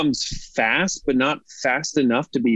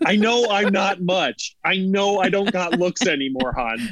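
put-on fed-up father voice, higher pitch; 4 semitones higher than usual. Acting out a dad in the family: disgruntled dad voice. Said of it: "it's a disgruntled dad in the family".

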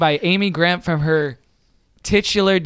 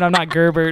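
normal talking voice

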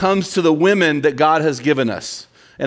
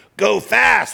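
raspy, gravelly voice, pitched up; 6 semitones higher than usual. Retelling what a stepbrother said about a road sign: imitating Mitch's raspy smoker voice. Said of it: "he had this raspy voice that sounded like he was a chronic smoker".

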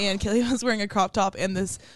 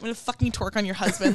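passionate, upset put-on delivery. Retelling a loud remark at a bar: imitating Kaylee, passionate and upset. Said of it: "so passionate, upset".

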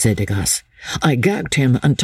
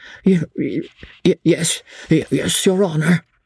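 frightened stammering, higher pitch; 4 semitones higher than usual. A frightened old man, commanded to answer, replies with frightened stammering. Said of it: "stammered the poor wretch".

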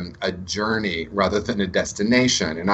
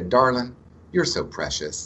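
put-on Southern US accent; 3 semitones higher than usual. Retelling what Mary Helen would say: imitating Mary Helen's Southern accent. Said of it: "She had this beautiful Southern accent".

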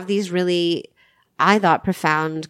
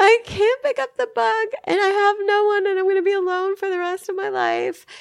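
put-on crying through tears, way up high. Retelling calling him the next morning, imitating their own sobbing. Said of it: "I'm like sobbing, literally sobbing".

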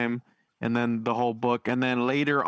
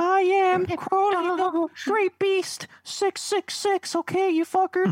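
put-on very high-pitched little boy voice. Showing how Aleister Crowley really talked: Aleister Crowley impression, like a little boy. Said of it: "he talks like a little boy".

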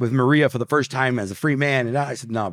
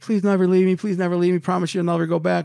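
mock-crying, much higher and faster; 6 semitones higher than usual. Retelling an embrace after jumping the railing, voice her plea, imitating someone crying. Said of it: "And she's crying".

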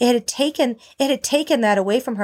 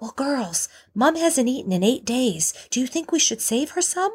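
put-on whisper; 3 semitones higher than usual. Retelling what the husband whispered to the girls: imitating a whisper. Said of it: "my husband whispering".

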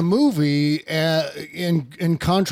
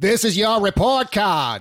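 slow, high, bad Boston accent. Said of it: "And Kevin Costner goes".

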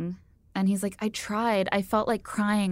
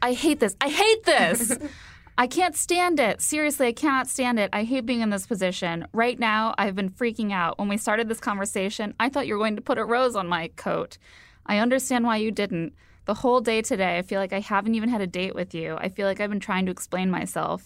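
ordinary talk

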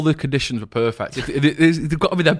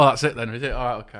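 usual speaking voice

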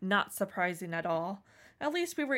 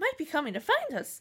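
put-on pitched-up, high teen voice mid-puberty; 5 semitones higher than usual. Redoing a story line after noting the voice went high, high-pitched like hitting puberty. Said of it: "sounds like you're hitting puberty".

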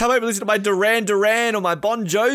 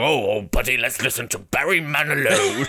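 very low, deep voice, dropped way down; 11 semitones lower than usual. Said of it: "just [name] go".

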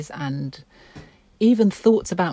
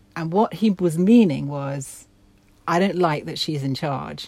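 usual speaking voice

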